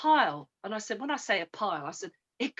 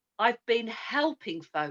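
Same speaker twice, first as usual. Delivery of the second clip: usual speaking voice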